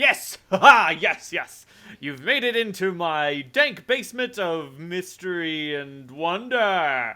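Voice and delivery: very loud, high, booming vampire voice. As the vampire's wounds close, the narrator speaks its line in Cortez's booming voice. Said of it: "Cortez's booming voice comes out".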